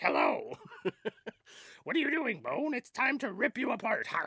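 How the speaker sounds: very high, trebly, squeaky voice with big swoops. Showing how he imagines her sounding when talking to Bone, Grover-like voice. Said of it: "That's what I think she sounds like".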